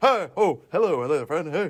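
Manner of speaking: talking hot dog character voice. After announcing an impression of a hot dog, greet a friend in a hot dog impression. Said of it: "I do an impression".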